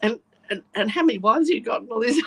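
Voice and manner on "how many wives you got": nervous babbling rambling, higher pitch. Retelling meeting a sheikh: imitating own nervous babbling. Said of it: "I get so nervous, I start talking bullshit".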